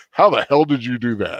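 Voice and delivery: full, mock-theatrical dramatic voice. Retelling a man looking from door to door then at him, in full theatrical voice. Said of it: "just full theatrical voice goes".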